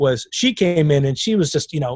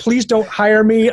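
put-on tearful crying plea, higher; 6 semitones higher, 3 dB louder than usual. Retelling a young actress's words at a meeting, imitating someone crying. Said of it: "she literally cried the entire time".

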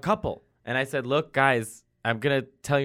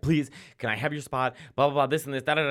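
put-on begging tone. Retelling how a man on a plane asked for the seat: imitating someone begging. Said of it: "begging me for my spot".

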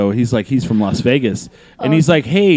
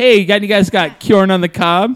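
put-on Midwestern Wisconsin accent; 6 semitones higher than usual. Joking about asking for kjorn on the cob: Wisconsin accent. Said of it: "It sounds like you're from, Wisconsin".

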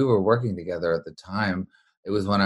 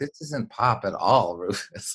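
speech mixed with laughter. Retelling a friend's reply to a record while driving: imitating someone laughing while talking. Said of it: "started laughing r-, uproariously".

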